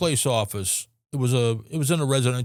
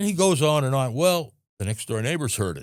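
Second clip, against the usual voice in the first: normal talking voice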